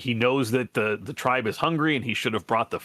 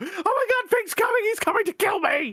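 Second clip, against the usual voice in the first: very high, terrified, panicked shrieking. Voicing a character who sees someone storming out of the tree line, screaming in panic. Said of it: "just screams and throws himself on the ground".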